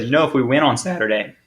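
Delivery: voice breaking and cracking mid-phrase. Speaker recounting a beard bet he made, voice cracking. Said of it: "excuse me, voice crack again".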